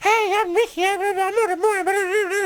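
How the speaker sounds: put-on very high, slow prepubescent young-teen voice. Describing a radio host's earlier on-air voice, doing a prepubescent teen voice. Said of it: "he's like a prepubescent teen".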